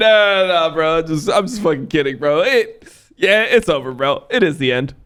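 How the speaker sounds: put-on hysterical laughter breaking through the words. Imagining Nemesis bursting into laughter: imitating Nemesis laughing hysterically. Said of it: "start hysterically laughing and be like".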